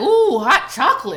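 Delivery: nasty, lecherous, sleazy, suggestive tone. Retelling what a boss allegedly said to an employee: imitating a nasty boss's come-on. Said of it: "she alleged that he would be like".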